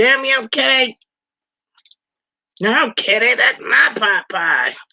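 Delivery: cartoon kid voice, very slow and drawn out. Acting out what he says to the cat while on the phone, in a Cartman voice. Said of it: "he sounds more like Cartman".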